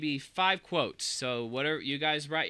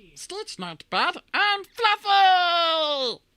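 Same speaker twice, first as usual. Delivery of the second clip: put-on alien creature voice, much higher and louder; 8 dB louder than usual. Playing a game of lines to say in Stitch's voice: Stitch voice. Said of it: "five things you want to hear in Stitch's voice".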